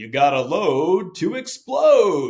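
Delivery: very loud, swooping, drawn-out booming man's voice. Recalling what Rob always said that the guys made fun of, in a booming Rob Hartman voice. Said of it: "in this booming Rob Hartman voice".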